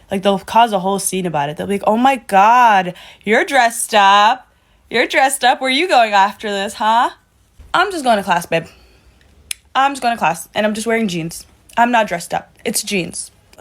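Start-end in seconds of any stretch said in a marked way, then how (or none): 1.8-7.1 acted-out, loud, nosy, teasing fuss. Imitating people who tease about dressing up: imitating someone saying it loudly. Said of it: "they'll say that shit loud as hell".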